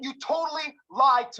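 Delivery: shouting angrily. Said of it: "Stop yelling".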